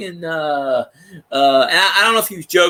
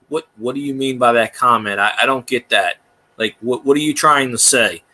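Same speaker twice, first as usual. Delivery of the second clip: dead-level, one-note delivery; 6 semitones lower than usual. Retelling how a streamer answered jokes in his chat, retelling a monotone reply. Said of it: "he talked monotone".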